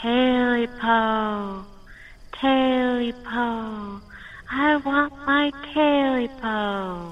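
eerie, unearthly voice. Narrating a tale, voicing the thing a man hears calling out: strange otherworldly voice. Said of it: "a strange, otherworldly voice".

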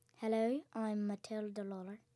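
put-on Irish accent. Slating own name for an audition, as asked: Irish accent. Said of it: "slate your name in the accents that your character uses".

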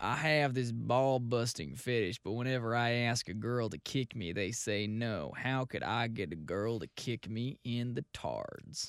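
put-on Southern accent. Reading an online question aloud on request, in a Southern accent. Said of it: "you got to read this in southern accent".

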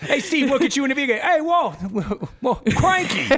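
put-on English accent.

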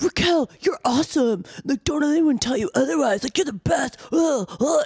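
impassioned, very high-pitched, passionate gushing speech. Retelling how Sandoval stood up to praise Raquel: imitating Sandoval being passionate. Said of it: "so passionate".

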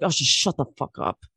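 grumbled, barely voiced, whispered mutter under the breath. Retelling how Kyle reacted to Amanda, imitating Kyle muttering under his breath. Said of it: "Kyle under his breath is like".

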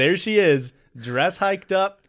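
ordinary talk, nothing marked

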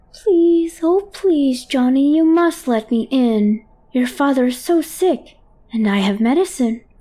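high, squeaky, wheedling, pleading tone. Reading a story where a creature begs Johnny at the door: high-pitched and squeaky. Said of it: "All high-pitched and squeaky".

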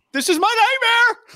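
very high, pained screaming outburst. Recounting a movie scene where a golf ball hits his shin, imitating Jason Segel screaming. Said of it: "he just starts screaming".

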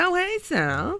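oozing, over-sweet, syrupy, schmaltzy showbiz charm. Showing how the roster members talk, in mock-schmaltzy talk. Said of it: "It's very schmaltzy".

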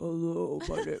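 put-on deep female voice. Speaker imitates a woman who spoke low to be taken seriously, imitating a woman's deep voice. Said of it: "speak in a deep voice".

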